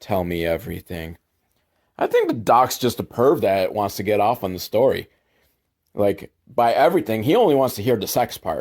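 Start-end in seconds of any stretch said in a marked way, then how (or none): 0.0-1.2 put-on, low, leering, creepy murmur. Speaker retells a story, quoting a doctor questioning a girl: mock-creepy doctor quote. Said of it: "like very creepily".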